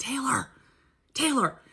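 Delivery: soft, hushed half-whisper. Retelling calling out to her roommate in her own house, half-whispering. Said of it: "but I'm whispering".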